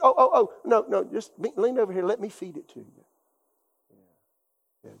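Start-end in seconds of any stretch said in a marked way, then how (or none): 0.0-2.9 kindly, caring, looking-after-you tone. Retelling how Jesus greets Judas at the meal: imitating Jesus being kind.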